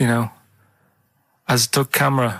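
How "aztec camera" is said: put-on German-accented voice. Retelling how a German man would say the words: German accent. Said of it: "the way he'd say it".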